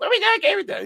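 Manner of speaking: very high, teasing, put-on caricature voice. Imitating Ness nagging for a gaming day: imitating Ness's voice. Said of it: "I have to do this to your voice because it's fun".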